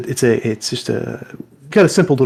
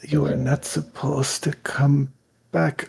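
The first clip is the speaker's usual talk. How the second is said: hushed whisper, very close to the ear; 3 semitones higher, 6 dB quieter than usual. Narrating to a player, the speaker voices Kalen whispering in their ear. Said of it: "whispering in your ear".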